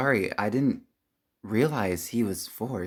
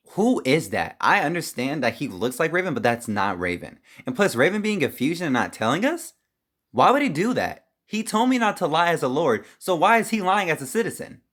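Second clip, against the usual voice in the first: high, rising angry outburst. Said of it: "why are you getting so mad about it".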